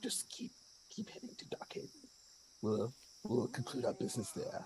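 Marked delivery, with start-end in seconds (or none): 0.0-1.9 hushed, secretive, conspiratorial whisper. Character slipping a coin to a man, whispering to him. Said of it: "whisper over to him".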